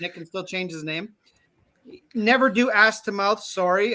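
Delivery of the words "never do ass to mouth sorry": ordinary talk, nothing marked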